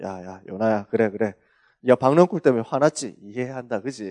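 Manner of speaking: low, soft, patient, soothing, warm coaxing voice.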